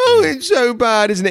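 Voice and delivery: imitated whiny crying, very high pitch. Retelling how a whining child gets parroted back, mock whinging cry. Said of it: "do the old parrot mimic".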